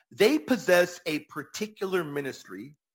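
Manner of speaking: plain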